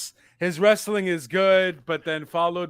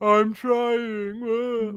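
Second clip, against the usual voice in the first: put-on tearful promo voice, higher pitched; 5 semitones higher than usual. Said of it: "Exactly what Cody Rhodes sounds like".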